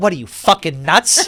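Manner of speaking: belted out, loud and high. Retelling a TV dinner scene, imitating Susie Green. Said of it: "And she goes".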